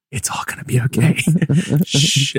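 awkward asmr whisper. Calming a complaining customer in a role-play: awkward ASMR whisper. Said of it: "awkward A S M R whispering in the ear".

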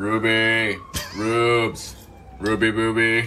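smitten, besotted, lovestruck man, words drawn out. Teasing, doing an impression of a man with a crush, calling out the girl's name playfully. Smitten straight guy impression. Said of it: "Impression of a straight man who has a crush".

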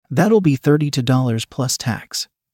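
ordinary delivery, nothing marked

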